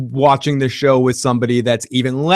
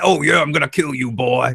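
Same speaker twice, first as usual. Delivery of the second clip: pro wrestler promo voice, trash-talk delivery. Joking about a fight scene, imitating Macho Man: Macho Man voice. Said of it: "like Macho Man".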